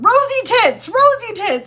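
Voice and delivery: very high, sudden, loud, drawn-out excited yell. Retelling how Nana suddenly yelled at the family; imitating someone yelling. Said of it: "why are you yelling that?".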